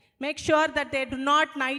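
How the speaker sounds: plain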